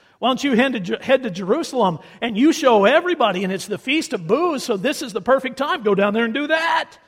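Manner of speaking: heavy, dripping, taunting, mocking sarcasm. Acting out Jesus' brothers taunting him in a put-on sarcastic voice. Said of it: "It's dripping with sarcasm".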